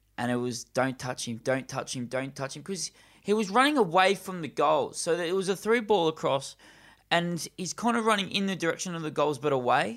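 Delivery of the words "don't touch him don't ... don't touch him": plain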